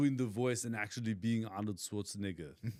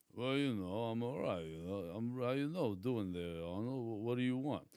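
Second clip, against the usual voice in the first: put-on tough-guy voice, mumbling; 4 dB quieter than usual. Doing a requested dialogue impression: Sylvester Stallone voice. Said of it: "talking to Sylvester S-, Sylvester Stallone".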